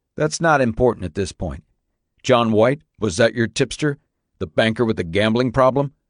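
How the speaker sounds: plain reading voice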